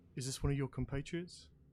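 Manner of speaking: spoken very low and hushed. Game master voicing a man speaking to Kenro and Killian, very low voice. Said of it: "in a very low voice to you two".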